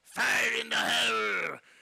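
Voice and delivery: rough, gruff, very high, very loud goblin shriek. Narrating a scene and voicing a goblin near the tunnel; gruff goblin voice. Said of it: "this gruffled like goblin voice".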